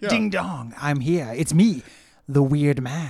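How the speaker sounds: loud, theatrical, dramatic villain voice. Asked to demonstrate, saying a catchphrase in a dramatic Westworld villain voice. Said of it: "saying that in increasingly dramatic voices, like I'm a villain".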